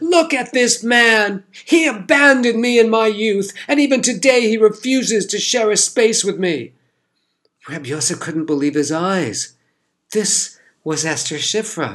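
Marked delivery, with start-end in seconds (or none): 0.0-6.7 very high, loud, shrill anguished outcry. A woman turns on the man who stepped aside for her: loud, anguished cry. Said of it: "cried in a loud, anguished voice".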